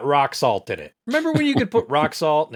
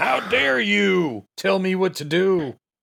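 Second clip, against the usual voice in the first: rough, over-the-top, exaggerated drunk dad voice; 4 semitones higher than usual. Playing a movie character's father: over-the-top drunk dad voice. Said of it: "I'm playing over the top drunk dad".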